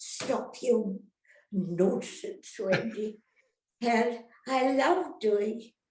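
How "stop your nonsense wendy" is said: put-on Scottish accent. Retelling what her Scottish nurse said to her, imitating Nursey's Scottish accent. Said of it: "She was a Scot".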